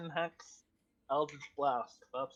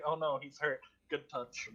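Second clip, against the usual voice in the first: usual speaking voice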